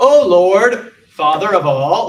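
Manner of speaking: very loud, very slow, booming, stiff delivery. Showing how a stiff public prayer sounds: imitating a very stiff prayer. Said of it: "very stiff prayer".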